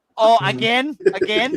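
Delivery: exasperated, very high put-on Thai accent. The speaker quotes his partner's reaction, imitating her thai accent. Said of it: "she'll go in her Thai accent".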